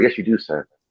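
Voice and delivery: meek, deferential, passive, submissive tone. Retelling an old 1960s video clip: imitating a passive man. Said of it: "he was really passive".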